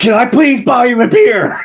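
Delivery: shrill, high, sudden blurted yell. Speaker retells finally cutting into guys talking forever, retelling a blurted yell. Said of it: "did you yell it at him like that".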